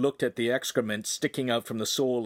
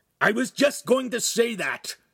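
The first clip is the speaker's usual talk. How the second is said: defensive tone, voice pitched very high; 11 semitones higher, 4 dB louder than usual. Replying after being told to spread the canvas sheet: defensive. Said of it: "Ugolino said defensively".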